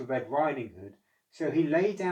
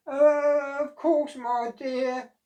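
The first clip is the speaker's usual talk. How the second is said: put-on very high, creaky old granny voice; 13 semitones higher, 7 dB louder than usual. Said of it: "said the wolf in a creaky old voice".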